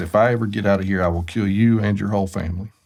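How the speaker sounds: very low mutter under the breath. Speaker retells what a man across the table said to him: very low, under his breath. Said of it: "very lowly and under his breath".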